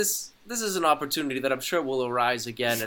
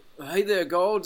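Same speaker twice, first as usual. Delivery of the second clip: best-effort put-on Scottish accent, drifting pirate-like; 5 semitones higher, 3 dB louder than usual. In a shared story, a player's character answers the voice of God: best-attempt Scottish accent. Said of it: "I'm doing my best Scottish accent".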